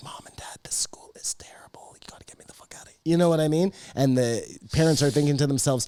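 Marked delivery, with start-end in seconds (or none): 0.0-3.0 hushed, very quiet, breathy whisper. Retelling a kid's phone call to his parents, imitating someone whispering. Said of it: "he's whispering on the phone".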